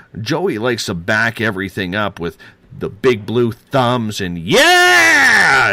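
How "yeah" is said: put-on loud, high, wild New York accent yell. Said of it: "His New York accent going crazy".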